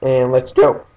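voice cracking. Starting a chase in a game, voice cracking. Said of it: "little voice crack there".

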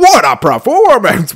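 sounding astonished. Mimicking the game's toy box narrator, who is super impressed by anything: imitating the super impressed toy box narrator. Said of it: "He's like".

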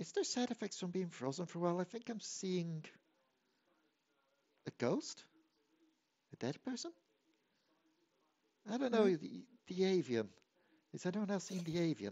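high, hushed, half-whispered aside. Narrator voices a woman half-whispering to a player just out of the ice: half-whispering. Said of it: "She'll then just also whisper to you".

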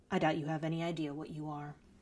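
very low, hushed voice. Narrator reads a man stepping close to her, very low voice. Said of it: "his voice so low that only I could hear".

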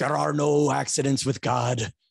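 put-on irate voice with Eastern European accent. Retelling a priest behind the confessional wall, in a mock-angry eastern european accent. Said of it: "And I know that's not a Polish accent".

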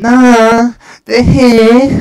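pushed out high and loud, horrible voice. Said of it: "That was a horrible voice".

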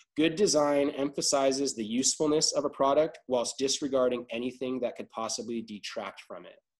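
normal talking voice

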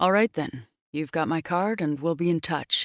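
ordinary delivery

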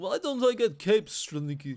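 loud, high-pitched, bad put-on Danish accent. Commenting on a strategy game, the speaker voices a guard in a bad danish accent. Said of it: "that's a crap Dane impression".

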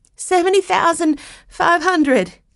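nervous voice. Narrator reads Miss Chase finally bidding at the auction, in a nervous voice. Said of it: "she said in a nervous voice".

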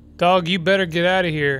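joking threatening tone. Playing a game on stream, the speaker talks to a dog, mock threatening. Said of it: "I'm threatening you".

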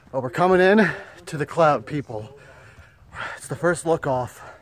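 out of breath, panting between the words. Filming for viewers on reaching the first lookout, out of breath. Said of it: "I gotta catch my breath".

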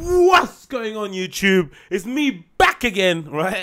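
annoying, over-eager online video host voice. Podcast host opening his show, mocking how YouTubers greet viewers, in a YouTuber intro voice. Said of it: "That's super annoying".

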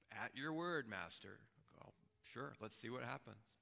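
acted exasperated sarcasm, frustrated and grudging. Retelling a fisherman's reply to an order to fish: imitating frustrated sarcasm. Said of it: "the frustration and the sarcasm in his voice".

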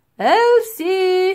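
shrill calling out. The professor calls for the girl, who has wandered off, calling out. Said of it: "he called".

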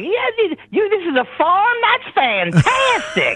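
very high, swooping, sing-song, gushing delighted enthusiasm. Imitating a California TV host who finds everything happy: Huell Howser impression. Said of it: "He's like".

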